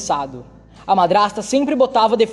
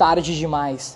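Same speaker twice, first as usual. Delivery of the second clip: ordinary delivery, nothing marked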